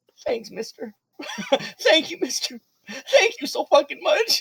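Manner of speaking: put-on very high, tearful, sobbing boy voice. Game narrator voicing a boy thanking the mister: crying boy voice. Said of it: "So he's just like crying".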